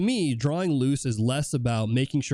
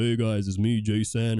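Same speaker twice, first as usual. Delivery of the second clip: deep, swaggering would-be tough-guy voice; 3 semitones lower than usual. Describing a guy who comes on the stream: imitating Jason's deep voice. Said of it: "Got a deep voice, and he's like".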